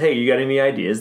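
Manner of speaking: normal talking voice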